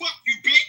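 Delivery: enraged, furious, very high-pitched shrill voice. Swearing back at someone who says to watch your mouth: angry. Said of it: "Why are you so angry?".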